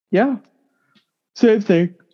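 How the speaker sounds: high-pitched words spoken through a yawn. Discussing the Packers with a co-speaker, talking through a yawn. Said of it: "Sorry, I was yawning there".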